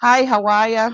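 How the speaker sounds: put-on Boston accent. Greeting viewers while joking about being a proper Bostonian: put-on Boston accent. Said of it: "can't hear my Boston accent".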